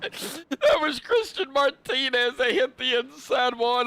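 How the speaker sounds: talking through laughter, cracking up mid-sentence. Naming the driver who hit the inside wall, laughing while talking. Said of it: "I'm cracking up laughing".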